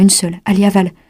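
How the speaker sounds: plain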